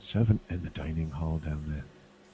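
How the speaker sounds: soft, quiet half-whisper. Speaking in character very quietly into his ear: half-whispering in character. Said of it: "very quietly in his ear, whisper".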